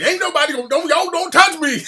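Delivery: mock old man yelling. Telling a story about an older man, the speaker retells his yelling. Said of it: "He's running around yelling".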